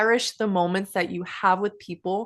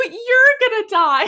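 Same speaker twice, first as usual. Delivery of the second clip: put-on very high, loud, hysterical little-kid crying wail; 13 semitones higher, 7 dB louder than usual. Retelling being five and talking to her mom, imitating hysterical child crying. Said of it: "hysterically crying about death".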